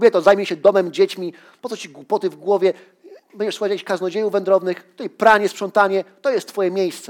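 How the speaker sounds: loud, high-pitched angry yelling.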